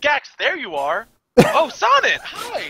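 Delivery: very high, swooping, feigned casual surprise. Playing a character who pretends not to see someone: feigning surprise in character. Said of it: "pretend like he doesn't see her first".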